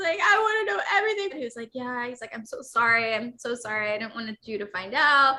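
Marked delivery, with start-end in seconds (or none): 0.2-1.3 play-acted, very high, heartbroken, upset yelling. Retelling a heartbroken talk with him, retelling own yelling at him. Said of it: "And I'm like yelling at him".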